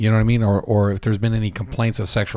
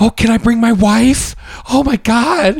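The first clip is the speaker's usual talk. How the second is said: very high, very slow, mocking gushing excitement; 13 semitones higher, 8 dB louder than usual. Mocking a co-host who was so excited about bringing his wife: mocking imitation of excited co-host. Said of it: "The first thing you said".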